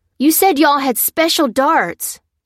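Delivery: loud, sharp, high shout. A man accuses an older woman after seizing her pistol: yelling. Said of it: "yelled Leckford".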